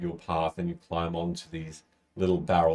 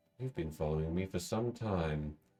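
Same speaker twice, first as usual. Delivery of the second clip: smooth, subtle voice, quieter; 8 dB quieter than usual. Voicing a cloaked figure addressing a player character: very smooth, subtle voice. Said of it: "this very smooth, subtle voice say".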